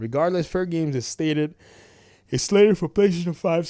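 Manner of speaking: words stretched by a yawn. Narrating a game news video: yawning while talking. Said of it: "sorry, I'm yawning".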